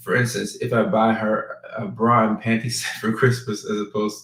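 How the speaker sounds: words broken up, laughing through them. Asking about buying a gift for a female friend: laughing while talking. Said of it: "sorry for laughing".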